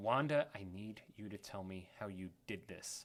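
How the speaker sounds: real menacing, demanding tone. Retelling a scene, quoting Agatha demanding answers from Wanda: imitating Agatha's menacing tone. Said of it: "In a real menacing way".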